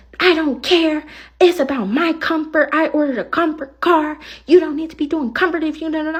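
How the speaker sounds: high, demanding, complaining yell. Retelling an argument with a passenger in the car: imitating a passenger yelling. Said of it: "So why are you yelling at me though?".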